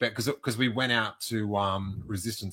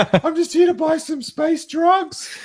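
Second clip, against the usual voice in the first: mock starstruck fangirling, higher and louder; 11 dB louder than usual. Retelling how a friend mocked them for meeting Han Solo: imitating starstruck fanning out. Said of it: "You were, like, fanning out".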